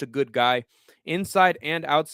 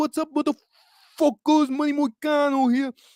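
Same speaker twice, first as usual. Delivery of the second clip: toned-down put-on accent, very high voice; 11 semitones higher than usual. Showing the toned-down version of the Moicano accent. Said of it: "now it's more toned".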